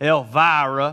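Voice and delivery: word stretched out in a drawn-out Southern drawl. Pronouncing a daughter's name the right way: Southern drawl on Elvira. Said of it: "you got to say it with a southern drawl or you're not pronouncing it right".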